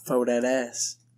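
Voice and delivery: funny, silly, goofy, comical delivery. Retelling a line from an old viral video: imitating a funny delivery. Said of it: "he would say it in a funny way".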